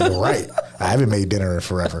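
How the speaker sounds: plain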